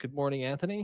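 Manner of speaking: normal talking voice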